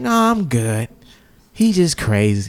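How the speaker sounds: slow, casual, unbothered, nonchalant tone. Retelling what a girl leaving the house said: imitating a nonchalant woman.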